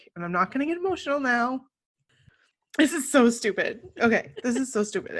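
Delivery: fast talking through tears. Getting emotional after an emotional day, crying while talking. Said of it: "I can't believe I'm crying".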